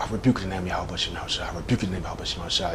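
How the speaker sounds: very soft, fast, mumbled speech.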